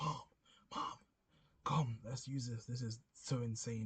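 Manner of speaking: mock blown-away, thrilled, excited screaming. Retelling calling to mum at the computer: retelling a scream. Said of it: "I was screaming".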